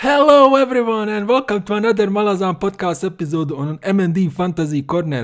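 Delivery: enthusiastic announcer voice. A host opens a podcast episode and introduces the show, sounding excited. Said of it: "you sound so excited, man, when you are doing these announcements".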